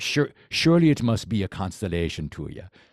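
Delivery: awful fake Jamaican accent, slightly Irish-sounding. Imitating a buddy's practice sentence for his Jamaican accent, worst Jamaican accent. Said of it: "probably the worst Jamaican accent".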